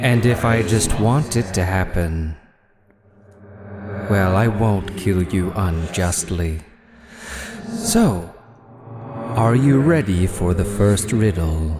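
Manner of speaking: monstrous creature voice. Game master, as the riddling beast, addresses the party before the first riddle: riddling beast voice. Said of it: "Yes, you came between a [name] and her prey. And for that, you must solve a riddle. The first riddle buys your life, but the second riddle buys you an answer you do not yet possess. Are you ready? / [".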